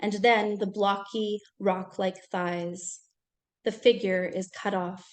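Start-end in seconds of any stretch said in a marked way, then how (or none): none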